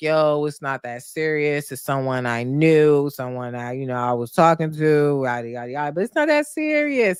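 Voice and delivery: acted breezy, chuckling, dismissive tone. Retelling a man calling back a woman who questioned him, acting out a laughing brush-off. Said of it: "He's laughing like it's a joke".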